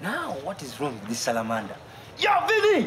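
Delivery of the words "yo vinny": high-pitched shouting. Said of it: "why are you shouting?".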